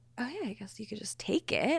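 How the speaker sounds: soft, hushed, unvoiced whisper.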